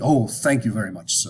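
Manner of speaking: put-on thick British accent. Retelling a man's reply after being told his english is fine, thick british accent. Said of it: "he had this very thick British accent".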